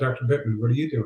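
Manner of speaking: acted irritated, angry, resentful tone. Retelling how a patient on oxygen confronted the speaker: retelling an angry man. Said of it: "got really pissed off and said".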